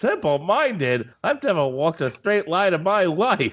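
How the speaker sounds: freaking out, high and swooping. Speaker retells a cartoon scene of the duck losing his temper, imitating Daffy Duck freaking out. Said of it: "but he freaks out".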